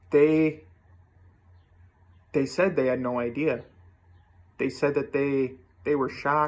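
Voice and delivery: voice catching and choked up with emotion. Recalling what their chosen support system said, getting choked up. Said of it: "I'm getting choked up just thinking about it".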